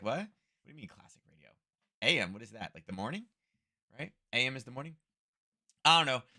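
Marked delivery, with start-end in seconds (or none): 0.0-3.2 play-acted, baffled, puzzled youngster voice. Imitating young listeners puzzled by classic radio: imitating confused young people. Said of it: "They're like".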